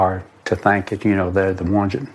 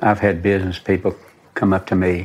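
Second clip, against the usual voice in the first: ordinary talk, nothing marked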